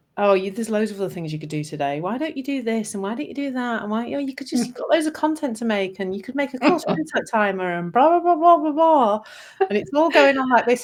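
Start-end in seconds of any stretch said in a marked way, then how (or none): 0.2-9.3 nice-sounding, sweet, coaxing, persuasive voice. Retelling the inner voice tempting away from the tax return: inner voice sounding nice. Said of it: "it can sound really nice".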